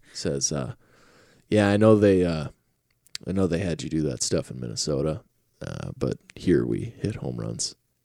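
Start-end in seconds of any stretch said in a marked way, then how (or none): 1.5-7.7 soft, calm, reassuring fatherly tone. Retelling a manager's calm words to a player: imitating a calm fatherly tone. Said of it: "calmly, like a dad would".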